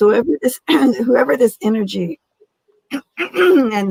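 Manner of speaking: choked-up voice, catching high. Explaining a card's meaning to Yvonne, choking up. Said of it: "Sorry, didn't choked out".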